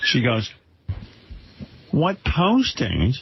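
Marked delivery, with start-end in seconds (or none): 1.9-3.1 put-on motherly voice, pitched up. Doing an impression of the speaker's mother on the phone: impression of my mother. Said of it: "I can do an impression of my mother".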